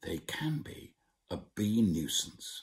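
put-on hushed whisper. Retelling what a father would say: imitating a hushed whisper. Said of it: "In hushed tones he would whisper".

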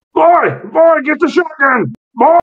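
very high-pitched, piercing scream. Narrating a story, voicing a man who starts yelling into the house: screaming. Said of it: "he begins to scream into the house".

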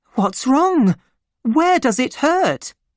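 very high, scared, frightened outcry. The narrator's half-sister calls to the doctor, crying out frightened. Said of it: "she cried".

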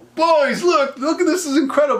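very high, put-on thrilled excited cry. Imagining how an excited disciple called out to the others; imitating excited exclamation. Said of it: "looking around so excited".

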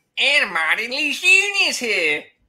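loud cowboy voice with swooping pitch. Retelling how the show host Barry introduces the speaker, imitating Barry like a cowboy. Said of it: "You made him sound like a cowboy there".

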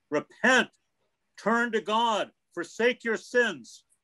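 put-on, very high, all-out fire-and-brimstone preacher yell. Retelling how a man yelled at the speaker's friend: loud preacher-voice yell. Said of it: "the loudest preacher voice he could make and yelled".

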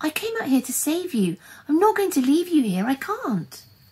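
earnest, high-pitched pleading. Anushka tries to heave the tiger cub, pleading with her. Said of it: "she pleaded".

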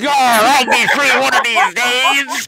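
raging, high, loud, full-throated screaming taunt. Quoting a favorite scene, villain yelling at King Kai from inside the planet: screaming BoJack impression. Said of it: "he's just screaming at King Kai from inside the planet".

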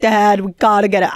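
mock frantic, panicked, hyperventilating screaming yell. Retelling a lost hamster, calling to dad: imitating own past screaming.

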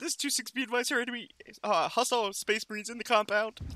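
breaking, cracking voice, heard over radio. During a game, retelling a teammate's radio call, imitating a cracking voice. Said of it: "With the cracking voice goes".

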